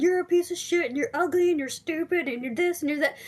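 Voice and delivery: abusive yelling. Acting out a person in a room who hates you: acting out someone yelling insults. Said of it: "And they're just yelling at you".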